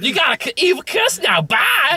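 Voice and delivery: high, sneering villain voice.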